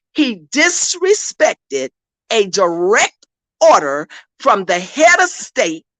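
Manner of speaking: very slow, low, deliberate, drawn out word by word. Speaker addressing an audience, spelling out a point real slow. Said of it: "I'm going to say it real slow".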